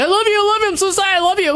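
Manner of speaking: panicked pleading, pitched way up high.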